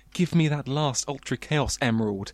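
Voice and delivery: normal talking voice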